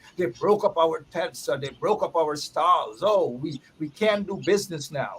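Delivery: ordinary delivery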